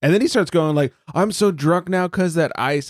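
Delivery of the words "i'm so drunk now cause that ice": put-on irritated, fed-up, slow, pissed-off griping. Retelling a friend's complaint about being drunk: imitating a pissed-off friend. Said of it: "he was so pissed".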